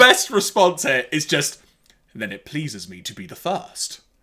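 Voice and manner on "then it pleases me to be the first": acted planet-sized villain voice, fully in character. Retelling a movie scene between Unicron and Megatron: Unicron voice. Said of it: "Unicron's response".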